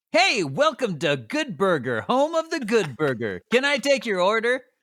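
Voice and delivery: high, sing-song, over-the-top friendly customer service voice. Showing what trained over-the-top friendly counter service sounds like: over-the-top friendly customer service voice. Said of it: "example of what that would sound like?".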